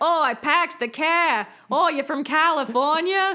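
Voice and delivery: slow, drawling put-on New England accent. Discussing a movie, the speaker imitates a new england accent. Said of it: "nobody has a New England accent in this movie".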